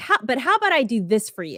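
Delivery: normal talking voice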